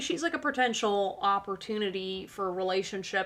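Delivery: plain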